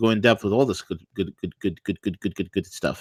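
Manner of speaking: stammering with repeated words. Show host wrapping up on air, stuttering from too much coffee. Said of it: "just stuttering because I got too much coffee".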